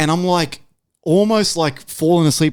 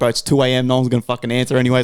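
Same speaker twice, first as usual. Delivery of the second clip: ordinary talk, nothing marked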